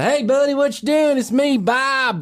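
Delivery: very high, working-class Southern drawl. Explaining the two kinds of southern accents, the first kind: working-class southern drawl. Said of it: "there are two kinds of Southern accents. There's a".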